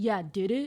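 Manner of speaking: weird, goofy, sarcastic, doubting tone. Retelling what she said in reply, imitating a sarcastic tone. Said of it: "That sounded, like, sarcastic or weird".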